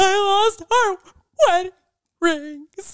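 mock bawling, very high, breaking, halting sobbed words. Retelling how they finally told their partner the bad news through tears, speaking between sobs. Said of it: "able to get out between sobs".

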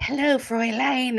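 put-on high, infantile voice like an overgrown baby. Describing a film villain's entrance and mimicking his greeting: Toht's infantile voice. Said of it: "this kind of infantile voice".

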